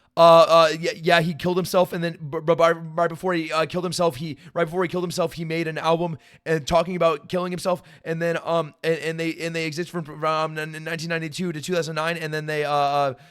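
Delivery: ordinary delivery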